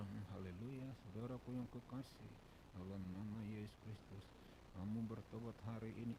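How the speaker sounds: level, flat drone with no pitch variation at all. Showing how it sounds when the speaker talks flat: flat monotone delivery. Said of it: "Coba bayangkan kalau saya ngomong datar".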